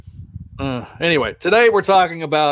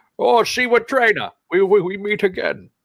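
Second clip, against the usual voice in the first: put-on Scottish accent voice; 5 semitones higher than usual. Showing what a Sean Connery impression would sound like: Sean Connery voice. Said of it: "if I was gonna do Sean Connery, I'd do it Sean Connery".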